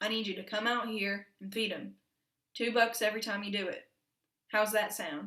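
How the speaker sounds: ordinary delivery, nothing marked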